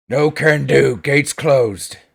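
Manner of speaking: speaking through clenched teeth. Narrating a tabletop game, voicing a character who won't open the gate, through gritted teeth. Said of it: "he kind of says through gritted teeth".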